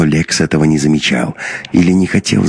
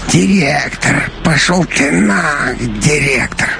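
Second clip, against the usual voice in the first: very high, rasped, wheezing cartoon-character voice; 11 semitones higher than usual. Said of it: "[name] прохрипел, подражая Масяне".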